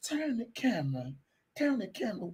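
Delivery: put-on seductive, sexy, sultry, come-hither voice. Retelling what a woman said on a call: imitating a sexy voice. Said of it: "She sounded sexy to the motherfucker too".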